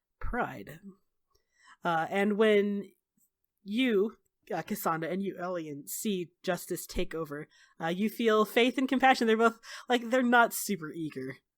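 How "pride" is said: dead flat, joyless voice. Voicing a spirit greeting an old acquaintance: joyless voice. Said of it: "with absolutely no joy in his voice".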